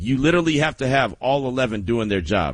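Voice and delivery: ordinary talk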